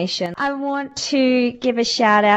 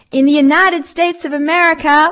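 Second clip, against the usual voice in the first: terrible put-on American accent, high and loud; 7 semitones higher, 7 dB louder than usual. Host reading out where listeners are, in a terrible American accent. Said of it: "my terrible American accent".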